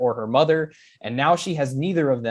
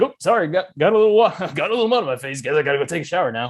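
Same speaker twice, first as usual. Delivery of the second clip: put-on bland suburban dad voice; 3 semitones higher, 4 dB louder than usual. Imagining a dad popping out of the water: put-on suburban dad voice.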